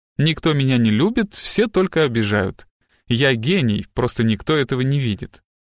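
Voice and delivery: ordinary delivery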